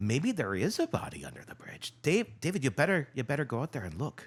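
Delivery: put-on light Irish accent, swooping and high. Retelling how friends reacted to a body under the bridge, quoting them: slightly Irish accent. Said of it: "That was sounding a little Irish".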